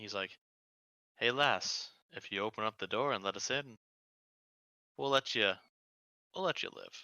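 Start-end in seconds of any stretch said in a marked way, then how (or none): 1.2-7.0 hushed, whispered voice. Narrating a game, a person comes up and speaks to the door, whispering. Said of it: "and kind of whispers to the door".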